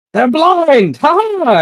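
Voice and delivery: very high, very loud, shrill, surprised, startled yell. Voicing a character who sees enemies blinded: yelling in surprise. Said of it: "he yells out, like, in surprise".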